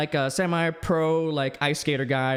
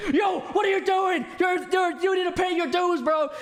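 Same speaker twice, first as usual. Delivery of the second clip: shrill, very high, super-loud shout; 13 semitones higher than usual. Retelling a scene where a character demands payment: imitating someone saying it loudly. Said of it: "he says that super loudly".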